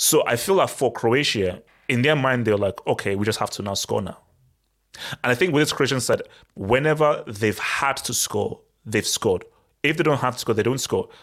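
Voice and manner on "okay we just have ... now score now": ordinary talk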